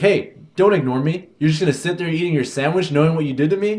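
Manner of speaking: put-on woman yelling. Retelling a scenario where a lady yells at someone eating: imitating a woman yelling. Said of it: "you hear someone yelling behind you".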